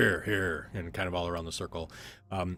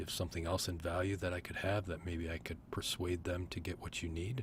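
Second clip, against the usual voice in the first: soft, hushed, half-whispered aside; 10 dB quieter than usual. The game narrator voices a character speaking to a player, half-whispering. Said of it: "He kind of whispers to you".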